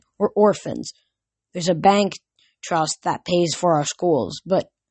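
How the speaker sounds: plain reading voice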